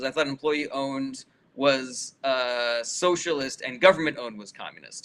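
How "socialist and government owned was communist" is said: ordinary talk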